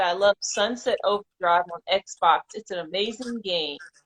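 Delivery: ordinary talk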